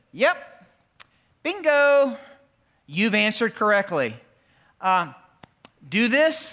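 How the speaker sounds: put-on wry, teasing, dry, playful sarcasm. Explaining the passage, voicing Jesus's answer to the man: retelling Jesus's sarcastic reply. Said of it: "with a little bit of holy sarcasm in his voice and a twinkle in his eye".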